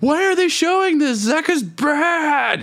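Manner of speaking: acted, very high shrill scream, bad stretched out. Retelling a fan during the lane breakdown: imitating someone screaming. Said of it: "the one guy was just screaming".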